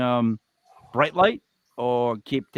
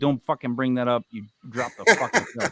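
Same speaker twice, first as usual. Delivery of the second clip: put-on angry grumble. Host voicing what a guest's reaction seemed to say, imitating an angry growl. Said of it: "angry that you'd knock the thing off".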